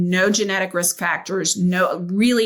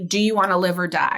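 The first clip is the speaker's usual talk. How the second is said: put-on booming, kind male voice. Retelling what a voice once asked, in a booming, kind male voice. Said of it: "very booming, kind male voice".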